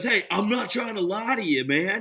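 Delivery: pushy, high, yelling sales-trainer voice. Retelling what a sales trainer yells at salesmen: imitating Andy Elliott screaming. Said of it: "screams at him the whole time".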